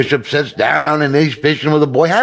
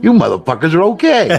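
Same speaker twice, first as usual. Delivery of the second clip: put-on blunt Chicago accent; 4 semitones higher than usual. Telling a joke, the new Pope answers the nun and priest, in a Chicago accent. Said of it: "his Chicago accent pokes out and he goes".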